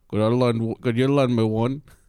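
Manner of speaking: poor attempt at Australian accent. Asking to borrow a cigarette, joking: bad Australian accent. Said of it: "That is not Australian at all".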